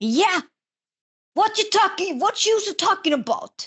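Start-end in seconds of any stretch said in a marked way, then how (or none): 1.3-3.7 bad Staten Island accent, much higher. Speaker imitating Staten Island people whose accents they love: horrible Staten Island accent. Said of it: "I do the horrible accents".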